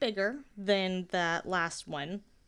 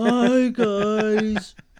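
put-on gloomy donkey voice, louder; 2 semitones higher, 12 dB louder than usual. Joking about a person who is usually gloomy, in an Eeyore voice. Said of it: "he's not just like Eeyore".

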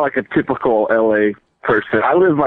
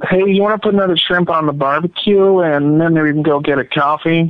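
fast, pitched-up, laid-on put-on American accent; 5 semitones higher than usual. Answering a request to say an australian phrase: put-on american accent. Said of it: "in an American accent".

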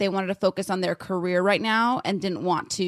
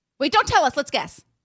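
high-pitched yelling, shouted out loud; 7 semitones higher, 3 dB louder than usual. Interrupting another speaker before they answer a question: yelling. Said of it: "Stop yelling".

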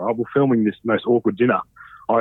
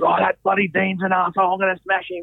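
put-on, high-pitched, screamed yelling rant, all worked up; 8 semitones higher than usual. Retelling how a man ran out in his jock, the speaker is imitating NASA yelling. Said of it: "yelling and screaming".

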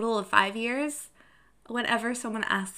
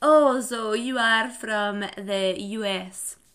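bad put-on French accent, loud and very slow; 6 dB louder than usual. Imitating how French speakers talk in English, in a horrible French accent. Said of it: "that was a horrible horrible accent impersonation".

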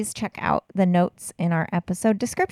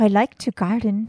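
Irish-accented voice. Two people practicing accents together; one offers a line in an Irish accent. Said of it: "Irish accents are kind of hot".

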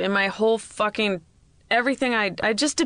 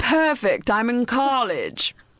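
put-on very slow speech in an English accent. Repeating a caller's words back to him: imitating an English-sounding accent. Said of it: "'cause it sounded like you just went".

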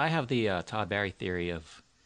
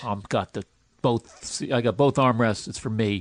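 loud, angry, mixed-gender put-on voice. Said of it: "That was an angry voice".

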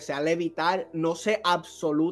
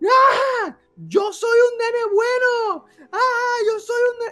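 mock crying scream, much higher, louder; 8 dB louder than usual. Retelling screaming back as a kid when mom screamed, imitating own crying scream. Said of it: "yo grito y empiezo a llorar y a gritar".

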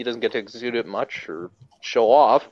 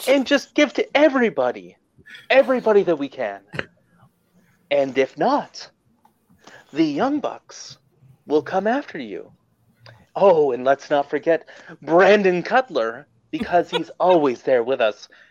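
put-on raspy phone-sex voice, pitched higher; 5 semitones higher than usual. Doing a requested impression of Kenny Omega: raspy phone-sex Kenny Omega voice. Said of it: "[name]'s impersonation of Kenny Omega has a phone sex voice".

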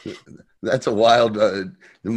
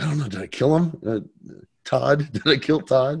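acted whisper, higher pitch; 4 semitones higher than usual. Retelling a story, the speaker acts out a man's words: imitating someone whispering. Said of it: "And he's whispering".

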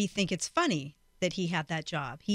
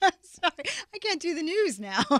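high voice, talking through bursts of laughter; 8 semitones higher than usual. Apologizing after being told to stop laughing: laughing while talking. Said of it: "stop laughing".

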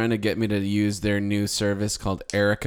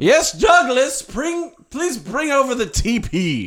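very high, very slow put-on Southern accent; 5 dB louder than usual. Asking a robot named douglas to bring the toilet paper: southern plantation owner voice. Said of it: "Is that a Southern plantation owner?".

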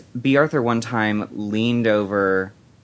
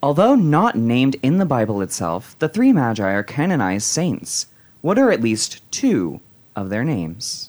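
sing-song, swooping radio-host announcer voice; 3 semitones higher than usual. Reading a quiz question aloud, putting on a Delilah voice. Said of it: "I'm gonna put on my uh, Delilah voice".

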